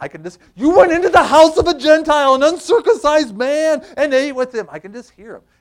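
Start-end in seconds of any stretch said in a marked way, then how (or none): 0.6-4.7 put-on high, loud, slight Yiddish-inflected accent.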